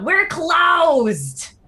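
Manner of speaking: very high yell with "closed" drawn out long. Mama McDougal calls out from the other side to the visitors, yelling out. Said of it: "she just yells out".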